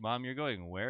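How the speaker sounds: ordinary talk, nothing marked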